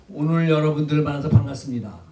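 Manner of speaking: flat level tune, sharp fall on final 다. Showing how Korean sounds to a first-time listener, flat, dropping sharply at end. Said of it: "너무 밋밋하더라. 끝머리 가서 뚝 떨어지더라".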